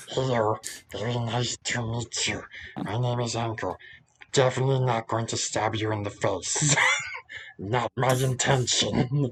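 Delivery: fantasy goblin character voice. Asked for an example, a player demonstrates his D&D goblin, Ankle goblin voice. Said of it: "the goblin voice that I do for Ankle".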